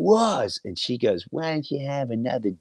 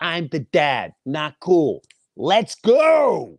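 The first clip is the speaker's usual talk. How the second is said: put-on firm, deliberate raised voice, very slow, drawn out. Retelling telling a group to leave with the family: imitating own raised voice. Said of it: "My voice raises".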